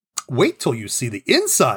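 proud, animated, swooping delivery. Narrator reads a woman inviting guests to see inside her house, proud. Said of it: "Jane said proudly".

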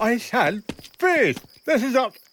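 muffled mouth-full speech. A police officer in a scene repeats his order, talking with a mouthful of food. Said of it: "had a mouthful of chip butty".

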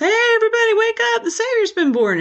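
mock top-of-the-lungs shout, very high, loud and excited. Imagining the shepherds running through Bethlehem: imitating people shouting loudly. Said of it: "shouting at the top of their lungs".

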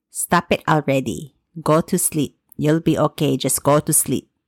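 put-on Filipino-accented voice. Knocking on the wall between bedrooms, a mom speaks to her child in a Filipino accent. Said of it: "in her Filipino accent".

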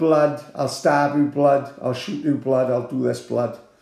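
ordinary delivery

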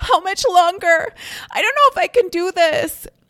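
very high panicked voice. Speaker showing how women in labor sound at peak contractions, in a panicked voice. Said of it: "in a very panicked voice".

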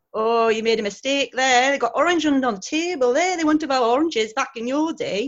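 put-on clumsy, poor northern English accent. Speaker retells an older lady in the kitchen telling him he made a mistake: poor northern accent attempt. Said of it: "That was my very poor attempt to a northern accent".

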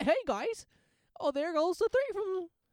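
very high, loud, squeaky cartoon commentator voice. Imagining Mickey as the commentator on a Disney Plus game, doing a Mickey Mouse voice. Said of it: "Fucking Mickey?".

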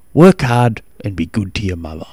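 plain

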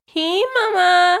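influencer voice, pitched very high, chirpy. Retelling how a TikToker makes fun of influencers, do a mock influencer voice. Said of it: "she impersonates their voice and she goes".

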